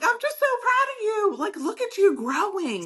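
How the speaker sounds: mock very high, swooping, gushing excited scream. Retelling praising a nurse who grew in confidence: imitating own past screaming. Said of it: "screaming and yelling".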